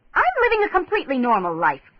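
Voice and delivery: curt, bitten-off, sharp, high, swooping snap. Reading a novel aloud, a woman answers her ex-partner: snapping. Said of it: "she snapped".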